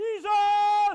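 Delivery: put-on loud shout. Retelling a fishing trip on a boat, imitating Tim's loud shout. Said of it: "He'd shout out".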